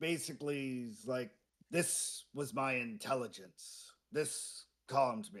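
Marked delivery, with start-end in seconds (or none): 1.7-5.4 low, rasping, reptilian alligator voice. Narrating a game, voicing the calmed figure who talks to the player: raspy alligator-like voice. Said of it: "Very raspy alligatory voice".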